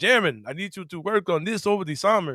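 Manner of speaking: put-on shaky Finnish accent. Imitating Tomas Isolo talking to Jeremy: Tomas Isolo, bad Finnish accent. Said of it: "I know I'm sounding kind of Count Chocula".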